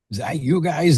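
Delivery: put-on heavy Boston accent. Retelling what a man said after the show on seeing the mugshot, big boston accent. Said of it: "In this big old Boston accent".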